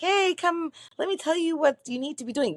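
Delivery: squeaked out fast and high. Imagining God speaking to someone, putting on a Mickey Mouse voice. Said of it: "in Mickey Mouse voice to like be like".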